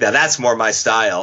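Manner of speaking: ordinary delivery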